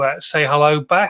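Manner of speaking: ordinary talk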